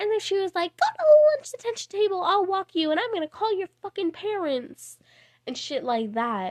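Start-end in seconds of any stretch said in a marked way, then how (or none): 0.8-5.0 put-on yelling, higher. Retelling how the teacher yelled about detention: imitating the teacher yelling. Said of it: "she started yelling at me".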